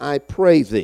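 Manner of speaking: sensual, delicate, coaxing voice. Preaching on Samson, voicing Delilah beginning to manipulate him in a sensual, delicate voice. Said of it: "in her most sensual, delicate voice".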